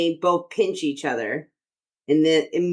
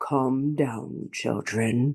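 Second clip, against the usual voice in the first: deep, aggravated, fed-up voice; 3 semitones lower, 4 dB quieter than usual. Quoting an aggravated comic-book character in a deep voice: imitating James Earl Jones deep voice. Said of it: "the deep voice, like the very famous man who voiced Mufasa".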